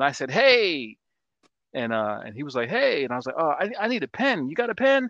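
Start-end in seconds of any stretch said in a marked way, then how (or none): 3.4-5.1 put-on yelling, louder and higher. Retelling asking the guy behind the bar for a pen, retelling a yell. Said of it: "why are you yelling at that dude?".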